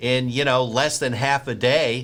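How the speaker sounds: normal talking voice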